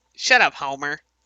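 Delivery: animated cartoon boy voice. Trading Simpsons lines, answering Homer in a Bart Simpson voice. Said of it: "That's my Bart impression".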